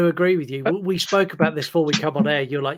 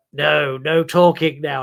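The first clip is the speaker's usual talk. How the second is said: put-on demon voice; 4 dB louder than usual. Describing a film scene, the speaker imitates the child actor's line in a demon voice. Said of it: "he goes into like a demon voice".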